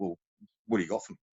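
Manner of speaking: put-on firm, staunch, no-nonsense delivery. Retelling a man's reply when asked about a drilling course, imitating a staunch voice. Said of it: "staunch voice".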